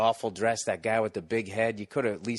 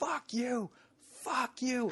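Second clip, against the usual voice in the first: put-on drawn-out screaming, voice very high; 7 dB quieter than usual. Retelling a dude who ran up to the stage: imitating someone screaming. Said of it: "he's screaming".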